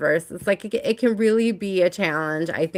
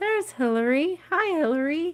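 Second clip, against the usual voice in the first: tiny, squeaky voice, very high pitched; 10 semitones higher, 4 dB quieter than usual. Speaker spots hillary and greets her, in a little squeaky voice. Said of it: "It's my little squeaky voice for you".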